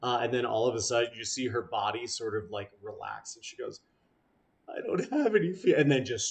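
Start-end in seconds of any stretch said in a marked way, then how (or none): 4.7-5.7 very high, loud voice dissolving into bawling. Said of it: "starts, like, bawling".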